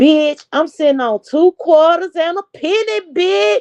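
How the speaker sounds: high-pitched show-off persona voice. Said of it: "In my Lady Nika voice".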